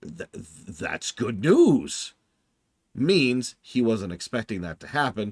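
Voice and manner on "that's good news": stammering, halting, tripping over the words. The speaker retells a man's reply on hearing his ship was found: imitating his near-stuttering. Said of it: "his response was almost stuttering".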